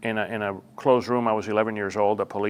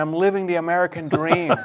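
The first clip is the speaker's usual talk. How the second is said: screaming, higher and louder; 8 semitones higher, 5 dB louder than usual. Retelling coming home at eight after earning money: imitating own past screaming. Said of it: "I came home screaming".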